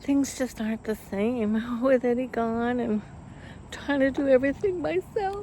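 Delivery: crying through the words, tearful, breaking, drawn-out. Talking to viewers outside on their swing, crying. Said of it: "I am crying".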